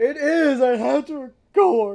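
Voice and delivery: voice cracking, very high and loud. Snapping back at teasing about the job: voice cracking. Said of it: "Why did my voice just crack?".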